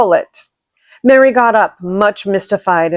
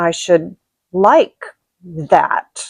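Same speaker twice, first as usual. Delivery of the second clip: very slow, unhurried, drawn-out, lingering delivery; 3 semitones lower than usual. Narrator reads a boy's reply, spoken very slowly. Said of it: "he said very slowly".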